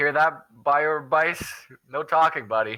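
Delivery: high, drawn-out taunting yell. Playing a character in a group story, calling to another character: yelling. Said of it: "I'm yelling this".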